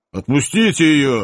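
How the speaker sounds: generous, lordly, grand, magnanimous tone. Offered his wish by an elf, a Cossack answers, magnanimously demanding. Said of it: "великодушно потребовал казак".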